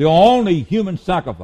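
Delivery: ONLY pressed hard with a sweeping fall.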